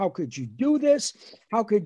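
mild yell, scolding tone. Retelling a phone call where his mother yelled at him: imitating mother yelling. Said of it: "She was yelling at me".

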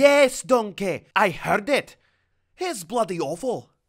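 very high-pitched, put-on cartoon character voice. Answering Donkey in an impressions contest: Shrek voice. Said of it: "Come on, Shrek!".

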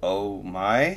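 inquiring, rising intonation. Reacting to another speaker finding the bottom: very questioning voice. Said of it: "And this very questioning voice".

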